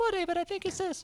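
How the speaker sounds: squeaky, very high, soft fake voice. Retelling filling dead silence after an unanswered football question, in a fake voice. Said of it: "a fake voice".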